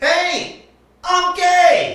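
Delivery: very high voice. Doing an impression of a guy coming out of the closet: impression of a guy coming out. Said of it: "here's an impression of a guy coming out of the closet".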